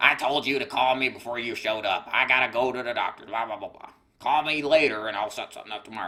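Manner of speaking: put-on smoker's voice. Retelling what a lady told him about an appointment, in a smoker COPD voice. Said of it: "in a smoker C O P D voice".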